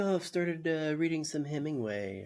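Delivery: mock overly friendly tone, creepy. Retelling a dinner scene's host being super friendly: imitating creepy over-friendliness. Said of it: "trying to be super friendly in the creepiest way possible".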